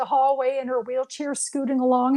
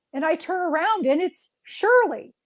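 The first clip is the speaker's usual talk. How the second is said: usual speaking voice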